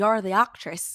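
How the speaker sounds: loud, rough, unconvincing bad Irish accent. Retelling what the building's contractor said to her, in a bad irish accent. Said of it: "I don't have a good Irish accent".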